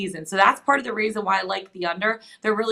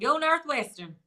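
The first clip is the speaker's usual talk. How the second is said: put-on Southern American accent, pitched up; 5 semitones higher than usual. After making a betting pick, the speaker repeats the cheer in a Southern accent. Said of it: "if I want to say it in the Southern accent".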